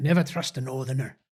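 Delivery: quiet, soft put-on Irish accent. Asking the other speaker about a saying, in a put-on Irish-sounding accent. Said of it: "Why are you talking in Irish".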